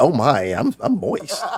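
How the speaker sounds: slow, suggestive, saucy drawl, acted out. Mocking how another speaker said a word, imitating a saucy delivery. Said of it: "you had some Prego spaghetti sauce in it".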